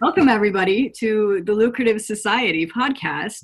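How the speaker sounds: loud, laughing, cracking up throughout. A podcast host opens the show, laughing while speaking. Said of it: "I am already cracking up".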